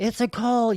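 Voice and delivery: put-on, high-pitched shouting. Retelling yelling in the street in front of cars: imitating own yelling. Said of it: "yelling it and stuff".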